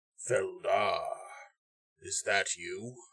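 deep, low, rasping, gravelly voice. The game narrator voices a figure recognizing Feldar, in a low, gravelly voice. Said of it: "you hear a low, gravelly voice say".

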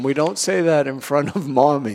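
ordinary talk, nothing marked

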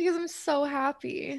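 soft, high voice, crying happy tears. Answering the question of why they're crying, speaking while crying. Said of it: "I am like full on crying right now".

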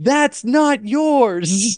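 high, slow, angry dad voice yell. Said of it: "yell in my best angry dad voice".

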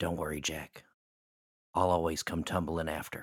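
barely audible, soft, hushed half-whisper. Voicing a character hugging her brother close: very soft, barely audible. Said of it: "says very softly in his ear, you can barely hear".

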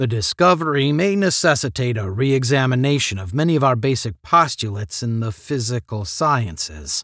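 ordinary delivery

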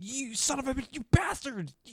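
put-on very high, angry muttering. Retelling a man talking to himself, the speaker imitates his angry muttering. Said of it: "he's muttering obscenities".

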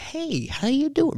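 put-on male British accent, pitched very high, slow. Describing how a figure turning around in the corner sounds, British accent. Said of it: "British guy".

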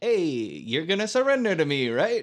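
put-on movie-style Italian accent. Retelling a movie scene, quoting the character's demand: Nicolas Cage's Italian accent in the movie. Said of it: "his accent does sound kinda like that".

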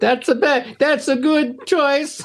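horrible Italian accent, very high and slow. Joking with friends about being glad to spend time together: horrible Italian Mario voice. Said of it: "horrible Italian Mario".

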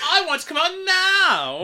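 very high-pitched, swooping voice, "now" drawn out. A parent mimics their daughter, in the girl from Willy Wonka voice. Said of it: "Does she sound like the girl from Willy Wonka?".

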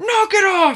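very high, menacing, angry yell, acted out. Retelling how Ray breaks up fights: imitating someone yelling angrily. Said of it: "he seems like he's gonna punch one of them".

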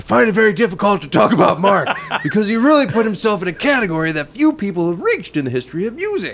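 angry, forceful reading. Reading aloud a musician's quote about Mark, angry voice. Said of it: "I'm going to read this in an angry voice".

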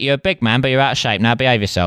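very fast, rattled-off patter. Doing a fast-talking 1960s Michael Caine impression. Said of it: "that kind of nineteen sixties Michael Caine where he's talking very quickly".

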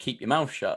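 normal talking voice

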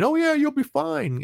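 very high, taunting, mocking and dismissive, pitched way up. Retelling what a stranger on the internet said: imitating someone mocking. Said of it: "they were mocking, uh, mocking me".

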